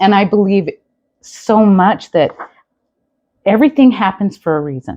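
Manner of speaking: moved, halting, stopping mid-phrase, broken phrases. Talking about sharing a surgery anniversary date with the guest, emotional. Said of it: "I'm having an emotional moment".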